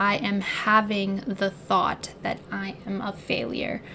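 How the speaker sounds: normal talking voice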